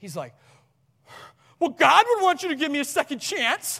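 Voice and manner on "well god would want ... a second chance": preachy, shrill, very high and loud. Retelling what someone said at the car door: imitating someone preaching. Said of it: "he starts, like, preaching at me".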